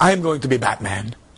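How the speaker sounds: put-on thick Mexican accent. Retelling what a small kid in class said: imitating a thick mexican accent. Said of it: "he's got a very thick Mexican accent".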